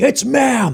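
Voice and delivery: high-pitched scream.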